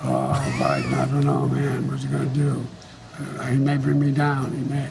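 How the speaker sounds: put-on, gravelly old man voice. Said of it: "with his grovelly voice".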